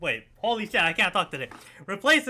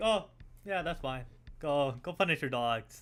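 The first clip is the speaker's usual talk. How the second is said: put-on casual, unbothered tone, lower and quieter; 3 semitones lower, 7 dB quieter than usual. Retelling how another speaker reacted with no reaction: imitating an unbothered reply. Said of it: "just no reaction to".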